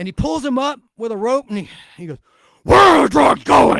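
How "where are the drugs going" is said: very loud, raw, rasping over-the-top hero scream. Acting out the Batman Begins interrogation scene: screaming Batman impression. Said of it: "the way he would scream, just like I did in the mic".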